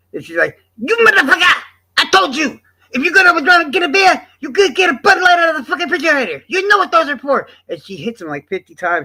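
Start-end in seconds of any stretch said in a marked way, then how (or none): 0.8-7.5 mock shrill, very high, furious shrieking yell. Retelling a wife beating a man with a stick, imitating her furious yelling. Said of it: "calm down, mama, calm down".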